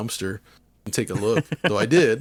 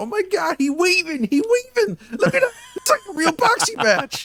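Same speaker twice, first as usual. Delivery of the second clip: put-on wild excited shriek, very high and loud; 5 dB louder than usual. Retelling a store visitor's reaction to a boxing game: imitating a guy freaking out. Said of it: "he's just, like, freaking out".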